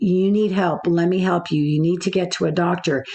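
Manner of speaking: ordinary talk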